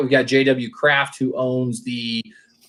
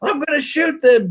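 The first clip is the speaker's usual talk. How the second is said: very high, frantic-sounding yelling; 13 semitones higher than usual. Retelling a bobcat video, quoting the man's threat, retelling a man yelling. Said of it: "and he's yelling".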